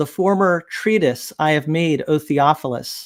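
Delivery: normal talking voice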